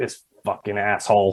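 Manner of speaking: quiet muttering whisper. Retelling a duel setup where the other man whispers to himself, retelling a whisper to himself. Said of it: "So he's like whispering to himself".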